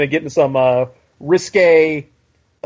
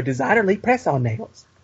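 put-on sounds like an eleven-year-old boy; 5 dB quieter than usual. Quoting a family line imitating an eleven-year-old kid's voice. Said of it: "Your voice, dude".

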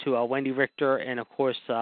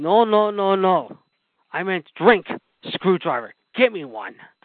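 put-on broken English, higher and louder; 6 semitones higher, 6 dB louder than usual. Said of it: "in his broken English".

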